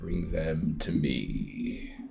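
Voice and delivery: deep, low, grating, hushed rasping voice. A voice speaks out of a rippling mirror on the wall: deep, rasping voice. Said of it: "deep, rasping voice say".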